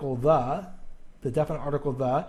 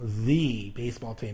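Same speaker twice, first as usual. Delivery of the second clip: the stressed and said as thee; 5 semitones lower, 3 dB quieter than usual. Grammar lesson on the emphatic article: stressed 'the' said as thee. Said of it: "you put a lot of emphasis on it".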